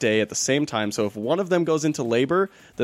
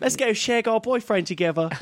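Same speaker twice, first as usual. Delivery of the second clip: very high fake Australian accent drifting into British; 10 semitones higher than usual. Joking about people from Australia, in a put-on Australian accent. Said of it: "We sounded a little British there".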